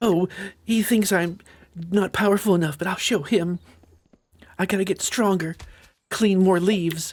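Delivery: very high, put-on anime-style voice. Playing a game and voicing a thought in a put-on anime character voice. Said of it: "Gotta do that that anime voice".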